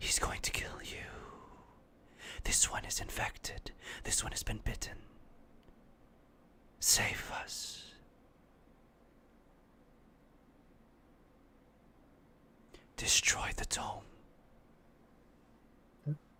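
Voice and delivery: hushed whispered chorus of many voices. Voicing what the adventurers hear as the door opens: thousand different voices at once. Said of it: "it sounds like a thousand different voices".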